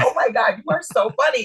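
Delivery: high, put-on laughing gush, words broken by laughter. Retelling casting people laughing at her: imitating someone laughing while talking. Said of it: "they still kept laughing at me like".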